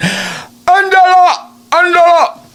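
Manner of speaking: put-on Mexican-accented, pitched high. Speaker imitates a woman's mother calling her by name: Mexican-accented call. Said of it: "her mom would call her in the Mexican tone".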